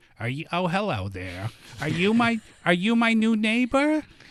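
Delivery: put-on thick New York accent, old lady voice, high, swooping. Retelling how an old lady next door greeted them at check-in, thick New York accent. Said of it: "She had that thick New York accent".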